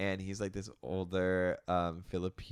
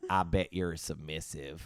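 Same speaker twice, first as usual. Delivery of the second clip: put-on Southern accent. Retelling what an older coworker said at work: imitating a southern accent. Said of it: "Southern accent".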